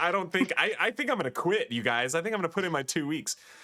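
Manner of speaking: high, rushed, put-on sobbing and panicky freak-out. Narrating a game turn, voicing a wounded man about to quit, crying and freaking out. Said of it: "he's like crying and freaking out".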